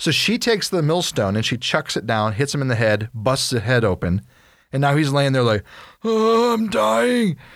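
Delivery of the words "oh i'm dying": mock death-throes groan, very high dying man's moan. Retelling how Abimelech lay hit in the head: imitating a dying man. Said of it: "That's what you sound like when you're dying".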